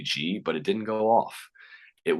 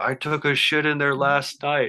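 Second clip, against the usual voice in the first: mock high-pitched laughing shout; 9 semitones higher, 4 dB louder than usual. Retelling his buddy's answer shouted over the gunfire, retelling a yell over gunfire. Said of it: "he yells over the gunfire".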